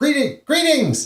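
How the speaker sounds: goblin-like creature voice, very high-pitched. Narrating the scene, voicing a kobold as it greets you, in a goblin-like creature voice. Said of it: "that sounds exactly like the goblin".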